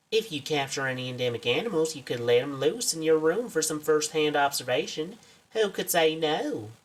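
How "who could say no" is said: slow, drawn-out put-on American southern accent. Pitching an assistant job to the listener: put-on southern accent. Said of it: "I don't know why I gave you a southern accent".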